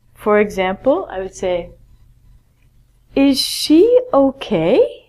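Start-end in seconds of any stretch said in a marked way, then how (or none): 3.2-4.9 voice lifts at the end on okay. Showing listeners how a spoken question sounds, with rising question intonation. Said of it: "My voice has to rise at the end".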